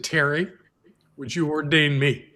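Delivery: put-on voice that breaks. Retelling a woman asking to be ordained: imitating a broken voice. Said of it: "with a broken voice".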